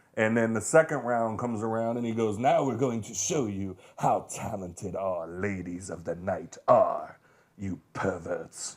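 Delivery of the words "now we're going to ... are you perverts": wild, crazy, over-the-top exaggerated French accent. Retelling what the burlesque show host told the crowd: crazy French accent. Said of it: "a crazy French accent".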